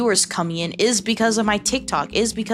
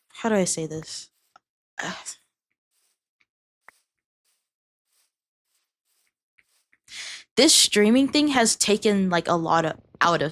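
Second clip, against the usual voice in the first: emotional voice, holding back, trying to stay composed. Talking about what streaming has taken out of you: emotional, trying to compose yourself. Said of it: "I have to compose myself a little bit".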